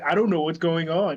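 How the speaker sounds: usual speaking voice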